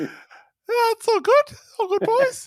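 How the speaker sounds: tiny, shrunken-down, very high squeaky little voice. Podcast co-host greeting the boys as a tiny version of himself: tiny-me voice. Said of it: "That was a tiny little version of me".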